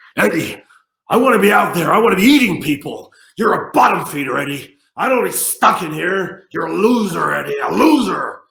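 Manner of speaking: very loud, high, belted monster voice rant. Retelling acting out a scene from a script: Venom voice. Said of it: "Venom is kind of, he's kind, he's going".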